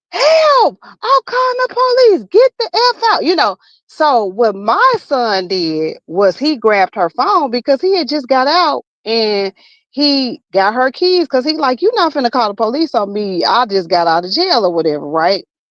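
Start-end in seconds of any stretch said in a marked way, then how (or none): 0.1-3.2 very high scream from the lungs. Retelling how a woman screamed at the speaker's son, retelling a scream for help. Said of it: "screaming, y'all, from the top of her lungs".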